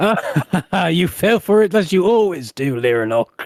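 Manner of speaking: chuckling, chortling, teasing tone through words. The narrator voices someone behind lyranok after he snaps to a salute, chortling. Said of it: "you hear a chortle".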